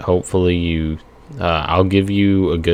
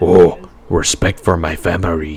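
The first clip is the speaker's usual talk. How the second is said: deep, slow, put-on Japanese accent. Explaining the complaint that his accent wasn't deep enough, japanese accent. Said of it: "that's how you have to do a Japanese accent".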